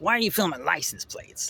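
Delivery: mock upset, put-on angry tone. Retelling an officer's question about filming: imitating Officer Morrison angry. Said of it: "he got angry the way he said it".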